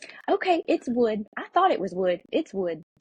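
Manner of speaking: play-acted out of breath, puffing the words. Retelling a church worker coming back to the phone: imitating someone out of breath. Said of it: "she's all out of breath".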